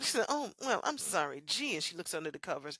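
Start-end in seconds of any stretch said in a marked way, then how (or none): 0.3-1.8 grating, affected put-on voice. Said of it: "I can't stand it when she used that voice".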